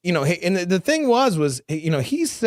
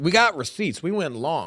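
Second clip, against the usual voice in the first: ordinary delivery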